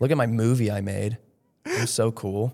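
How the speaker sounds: sarcastic fake bragging tone.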